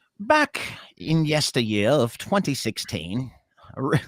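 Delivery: put-on slow, old-timey storyteller voice. Starting to read a news study aloud: put-on old-timey voice. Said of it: "Old-timey voice".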